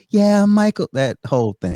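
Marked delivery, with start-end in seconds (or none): 0.2-0.9 little, high-pitched voice. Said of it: "with this little".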